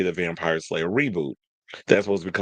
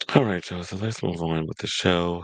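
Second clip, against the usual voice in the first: somber, depressed tone. Host getting back into the show, sounding somber. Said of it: "Why do I sound so somber?".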